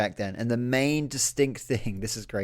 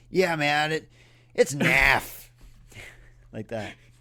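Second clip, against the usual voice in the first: bad put-on Southern California accent; 3 semitones higher than usual. Required to keep an accent in conversation, the speaker chats about the weather, bad Southern California accent. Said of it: "I got to do the accent".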